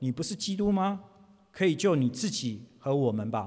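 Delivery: ordinary talk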